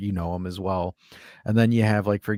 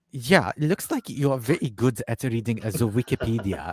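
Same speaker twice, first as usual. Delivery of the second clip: put-on German accent, best attempt; 4 semitones higher than usual. Retelling a commenter's reply in a put-on German accent. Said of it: "my best German accent".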